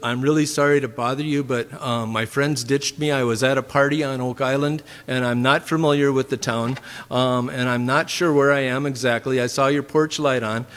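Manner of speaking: plain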